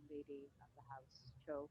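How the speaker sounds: very quiet, barely murmured, genteel aristocrat voice. Player speaking as their aristocrat character, addressing the lady of the house: very quiet. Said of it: "I will talk very quietly and go".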